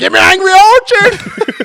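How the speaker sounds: shrill, high, loud, drawn-out yell. Retelling a night out at a bar: imitating someone yelling. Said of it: "he just keeps yelling at him".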